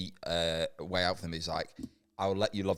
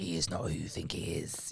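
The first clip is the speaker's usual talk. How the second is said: witch voice, quieter; 5 dB quieter than usual. Speaker pitching a story idea to the group, voicing a confession in a witch voice. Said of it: "almost like a witch's voice of being like".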